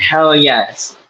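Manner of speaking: ordinary talk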